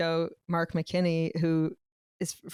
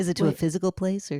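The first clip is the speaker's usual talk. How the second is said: mock nasal, stuffy radio host voice. Trying another take on public radio hosts: imitating a nasal public radio host. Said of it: "people on public radio have sinus issues".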